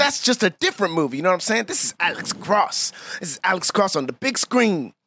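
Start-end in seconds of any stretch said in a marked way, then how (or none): 1.6-4.9 slow, proud, hyped-up superfan voice. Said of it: "Why are you saying Ale-, Alex Cross like you a big Alex Cross fan".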